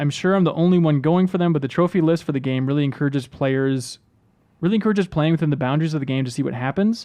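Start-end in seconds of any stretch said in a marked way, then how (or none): none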